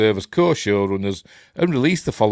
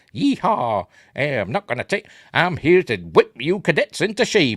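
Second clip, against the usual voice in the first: high-pitched, no-nonsense Southern accent; 6 semitones higher than usual. Guessing how Holly Hunter's Star Trek captain will talk, Holly Hunter Southern accent. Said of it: "With a, you know, Southern accent".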